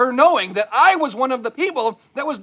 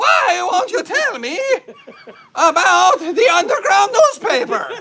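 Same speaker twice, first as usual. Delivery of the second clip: put-on high, insistent drunk shout; 6 semitones higher, 4 dB louder than usual. Retelling a mother who has had margaritas: imitating mom shouting. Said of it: "she's shouting".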